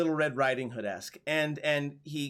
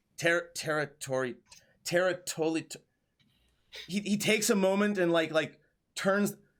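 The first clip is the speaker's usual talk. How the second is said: ordinary talk, nothing marked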